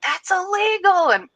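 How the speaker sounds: put-on shrill, loud, very high-pitched little-kid voice. A parent retells their four-year-old son's remark, imitating his loud voice. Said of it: "he's talking in his loud voice being like".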